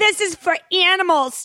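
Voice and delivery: put-on angry tone. Retelling a woman's remark as she walked right out, imitating someone angry. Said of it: "She was so angry".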